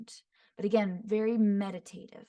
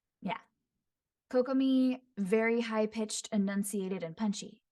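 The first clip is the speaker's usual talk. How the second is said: plain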